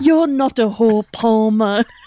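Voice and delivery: slow, high, drawn-out put-on British accent. Quoting a girl from a movie: imitating a british accent. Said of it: "doing her British accent".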